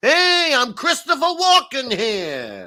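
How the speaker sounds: put-on ridiculous, over-the-top, very high, very slow New York accent. Retelling what was said to someone pushing in a queue: ridiculous new york accent. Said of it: "really ridiculous New York".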